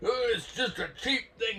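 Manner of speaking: fed-up, very high-pitched, shrill shout. Speaker retells a man failing to get his cast out, imitating a man yelling. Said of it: "finally he yells".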